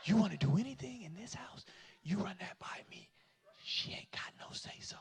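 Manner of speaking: imitated whispering. Retelling a talk with a father about the house: imitating a father whispering. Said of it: "Then why are you whispering?".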